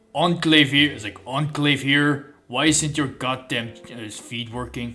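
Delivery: clumsy, terrible put-on Czech accent. Imagining what the Enclave soldier would say if he were Czech; put-on Czech accent. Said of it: "if you were Czech though, he would say".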